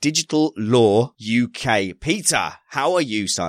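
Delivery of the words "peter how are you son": voice slipping into an Essex accent. The host greets the guest Peter on the show, slipping into Essex accent. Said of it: "I've slipped into Essex".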